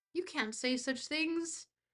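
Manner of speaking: suddenly slipping into a put-on British accent. Mid-conversation, suddenly switching into a British accent. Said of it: "why did I switch to a British accent there?".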